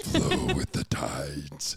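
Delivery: very deep, booming elemental voice. Narrating a summoned water elemental companion as it speaks, Aqua water elemental voice. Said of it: "this voice going".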